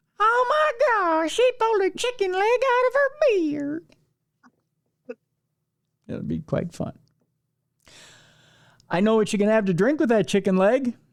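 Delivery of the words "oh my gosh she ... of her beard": put-on very high, unhurried, slow little-kid voice. Imagining little kids reacting at a circus, imitating little kids talking. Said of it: "I don't know why they speak like that".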